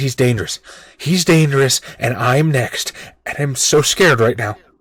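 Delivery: put-on young girl's voice, tearful, on the verge of crying. Narrating a scene, a young girl leans in to Con, tearful, eyes watering. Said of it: "she sort of leans in, eyes watering".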